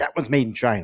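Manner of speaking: loud scolding shout. Recounting souvenir shopping, the speaker retells yelling at Chrissy and the kids, retelling a yell. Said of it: "I'm like yelling at Chrissy and the kids".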